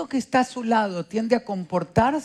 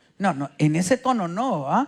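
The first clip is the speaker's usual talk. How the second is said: usual speaking voice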